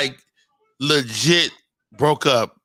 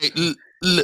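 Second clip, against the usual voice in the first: put-on stuttering voice. Retelling a line of Moses, who was a stutterer: imitating Moses stuttering. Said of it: "there's a couple people drown when he said".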